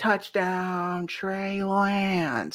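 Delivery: poor announcer voice, soft. Looking forward to hearing the radio announcer, the speaker does a terrible Tom Papa impression. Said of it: "That was a terrible Jim Papa impression".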